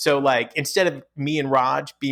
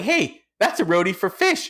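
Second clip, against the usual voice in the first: put-on high-pitched, cracking voice, breaking like a teenager's; 6 semitones higher than usual. Recalling saying this at nineteen, voice cracking. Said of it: "with my voice cracking like that because I'm like nineteen".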